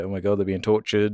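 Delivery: weepy, upset, tearful crying voice. Retelling a movie scene where a character cries: imitating someone crying.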